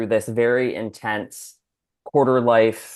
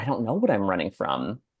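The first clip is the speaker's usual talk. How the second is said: words coming through tears, crying; 5 dB quieter than usual. Retelling what she said after being asked what she runs from: retelling own tearful words. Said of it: "but then crying and being like".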